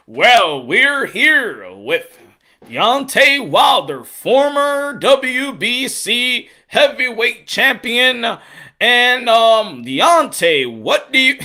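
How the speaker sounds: very slow broadcast announcer voice, stretching every word. Imitating an interviewer who sounds like an announcer: announcer voice imitating Ray Flores. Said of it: "the one that sounds like he's an announcer all day long".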